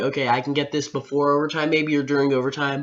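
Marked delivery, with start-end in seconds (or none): none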